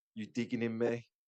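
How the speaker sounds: ordinary talk, nothing marked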